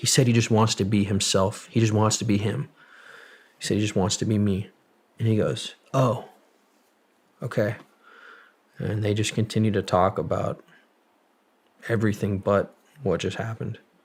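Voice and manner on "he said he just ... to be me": usual speaking voice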